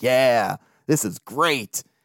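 smug, slow, drawn-out, pleased with itself. Retelling an on-air hot take, imitating Steve Phillips sounding proud of himself. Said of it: "You can hear it in his tone".

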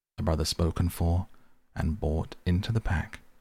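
ordinary talk

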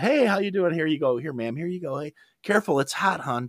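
high, soft, put-on fake-nice service politeness. Retelling serving customers, the speaker slips into a put-on customer service voice. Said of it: "wearing my customer service".

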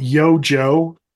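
ordinary talk

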